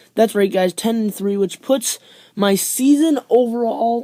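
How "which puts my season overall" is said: bad voice crack breaking on overall. Host recapping his weekly NFL picks record for viewers, bad voice crack. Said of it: "that was a bad voice crack".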